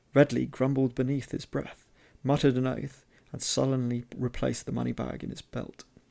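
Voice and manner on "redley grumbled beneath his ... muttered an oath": usual speaking voice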